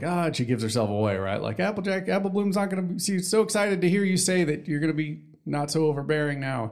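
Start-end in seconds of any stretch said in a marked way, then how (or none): 1.6-6.7 mock giddy, overexcited, high cartoon pony voice. Retelling a cartoon scene where a character gets excited: imitating excited Scootaloo. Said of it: "Scootaloo gets all excited".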